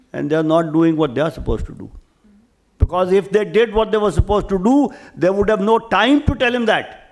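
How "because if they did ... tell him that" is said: upset, raised voice, rising. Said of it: "I am raising my voice because I am a little upset".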